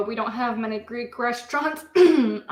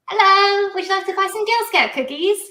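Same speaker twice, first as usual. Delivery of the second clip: fake British girl accent, pitched up, loud; 8 semitones higher, 5 dB louder than usual. Selling girl scout cookies as a kid, friends ask: put-on british accent. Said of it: "Put on the British girl".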